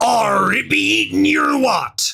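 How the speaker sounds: high, squeaky, slow, rough pirate croak. Reading out the reply of a therapist who is a pirate: pirate voice. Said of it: "Anything else for me to read out in a pirate voice?".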